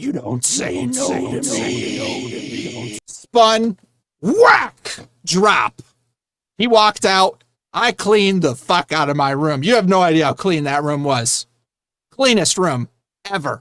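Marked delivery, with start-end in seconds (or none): 0.0-3.0 hushed, breathy whispered demon voice. Retelling what he said while holding the speaker up by the foot, in a demon voice. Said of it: "like a demon voice came out".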